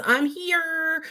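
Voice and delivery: pitch way up, drawn out. Relaying what Robin says about being here, in a Kermit the Frog voice. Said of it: "I sounded like Kermit there".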